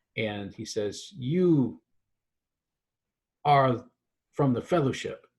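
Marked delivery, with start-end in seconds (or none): 1.2-5.2 slow, halting, piecemeal broken English. Voicing an acolyte who speaks slowly: speaking slowly in broken english. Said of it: "he starts to speak very slowly in really, really messed up English".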